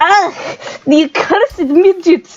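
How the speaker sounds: very high-pitched attempted Russian accent. Throwing down cards and pointing at the stand, speaking in an attempted Russian accent. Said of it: "Are you trying to do like a Russian accent".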